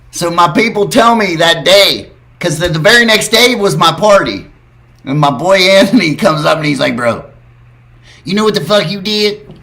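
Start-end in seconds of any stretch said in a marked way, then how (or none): 6.9-9.3 blunt imitated voice. Retelling what a friend said after a TV appearance: imitating Anthony. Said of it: "that's exactly how he sounds".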